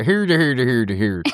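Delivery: put-on Swedish accent, puppet-style character voice. Asked which accent to wake up with, the speaker tries a Swedish Chef voice. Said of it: "like the, the Swedish Muppet guys".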